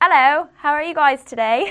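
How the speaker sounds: high, bad British accent slipping into Australian. Speaker tries the British accent they wish they had, bad British accent. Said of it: "that was like Australian".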